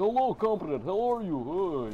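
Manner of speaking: silly fake Russian accent, very slow and high. Imitating American kids who put on a silly Russian accent, silly put-on Russian accent. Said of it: "They put on the stupid, silly Russian accent".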